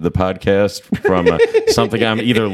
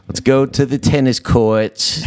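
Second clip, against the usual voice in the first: put-on high childlike voice with speech impediment; 5 semitones higher than usual. Imitating a woman with a speech impediment: imitating a speech impediment. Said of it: "she has a speech impediment".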